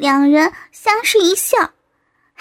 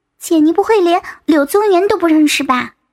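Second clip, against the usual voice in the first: plain reading voice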